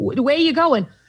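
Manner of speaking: put-on high Boston accent. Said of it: "so this is the accent".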